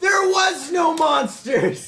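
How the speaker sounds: loud screaming, yelling. Voicing someone the players wake up to hearing: screaming. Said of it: "the sounds of screaming".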